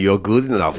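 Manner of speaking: low-pitched voice with German accent.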